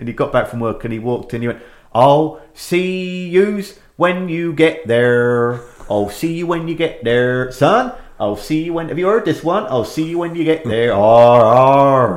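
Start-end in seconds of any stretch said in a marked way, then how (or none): 1.9-12.2 put-on Wiltshire accent, "arr" drawn out. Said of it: "he's got this Wiltshire accent".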